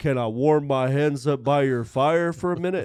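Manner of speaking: every word drawn out very slowly. Retelling a drunk horse rider's words: slow John Wayne drawl. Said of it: "almost like John Wayne, that real slow".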